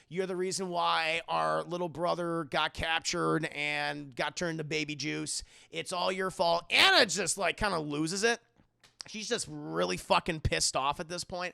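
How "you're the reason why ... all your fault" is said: usual speaking voice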